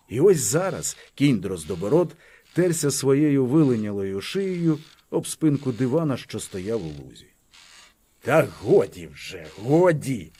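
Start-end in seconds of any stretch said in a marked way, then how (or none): 8.2-10.2 low, slow, irritated annoyed grumble. Petro Zeleniuk speaks to a horse rubbing against his sofa; grumbled, annoyed. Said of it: "буркнув Петро Зеленюк, чомусь роздосадований".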